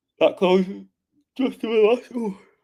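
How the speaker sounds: very high voice, spoken mid-yawn. Reviewing closed trades for everyone, the speaker is yawning. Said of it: "Sorry, I'm yawning".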